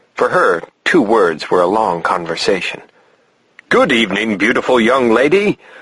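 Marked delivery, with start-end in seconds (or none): 3.7-5.6 grand, put-on lordly voice. Greeting a young girl at the door: Lord Mountbatten voice. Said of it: "in my best Lord Mountbatten voice".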